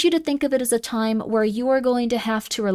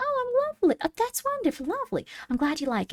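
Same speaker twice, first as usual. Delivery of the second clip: very high, soft, sing-song Southern accent; 11 semitones higher, 6 dB quieter than usual. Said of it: "you like the Southern accent?".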